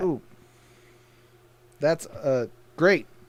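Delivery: slow, half-hearted, distracted, unimpressed tone. Reacting to a comic book called a big deal: unenthusiastic. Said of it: "you sounded like it's not cool".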